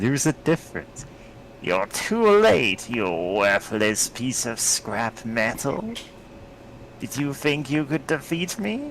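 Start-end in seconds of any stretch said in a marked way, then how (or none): 1.6-8.9 gloating, put-on comic-book supervillain voice. Voicing a figure during play, giving him the Green Goblin voice. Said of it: "I was giving him the Green Goblin voice".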